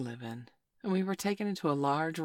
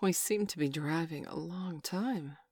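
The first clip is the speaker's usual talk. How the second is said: usual speaking voice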